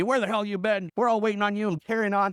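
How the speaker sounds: ordinary talk, nothing marked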